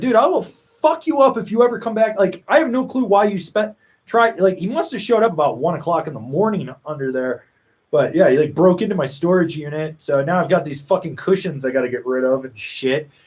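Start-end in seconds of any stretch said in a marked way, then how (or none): 0.0-2.2 high, threatening, screaming yell. Retelling confronting an intruder in a storage unit: imitating screaming at someone. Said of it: "screaming at him".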